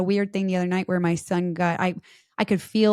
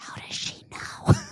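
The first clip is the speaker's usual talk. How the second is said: hushed whisper under the breath. Retelling what one child says to the other: imitating a whisper. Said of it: "you'll hear my one whisper to the other".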